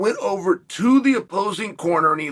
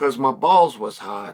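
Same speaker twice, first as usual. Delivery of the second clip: put-on unbothered, low, matter-of-fact tone; 4 semitones lower than usual. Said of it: "He made it very matter of fact".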